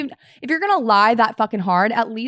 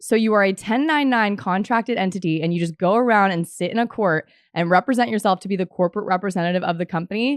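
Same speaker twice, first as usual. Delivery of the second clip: ordinary talk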